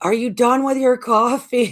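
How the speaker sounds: mock holler, very high and loud. Retelling standing at the top of the stairs, calling down: retelling a yell down the stairs. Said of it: "I'm yelling down".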